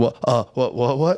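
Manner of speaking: put-on panicked, freaked-out, mock-frightened child stammering. Retelling a story, voicing a scared kid freaking out when confronted. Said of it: "the kid starts like shaking and he's like freaking out".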